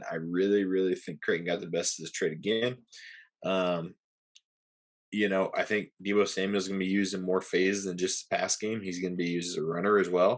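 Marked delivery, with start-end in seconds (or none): 0.1-2.8 sarcastic, insincere, saying the opposite tone. Judging who won a fantasy trade, in a sarcastic tone. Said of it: "the sarcasm in my voice".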